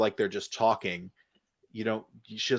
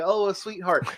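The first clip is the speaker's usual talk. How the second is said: very high, thick, fake sweet put-on Southern accent; 9 semitones higher than usual. Imitating a woman who put her voice on the whole time, in a put-on southern accent. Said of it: "your southern dialect voice that you kind of put on".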